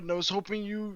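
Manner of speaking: ordinary delivery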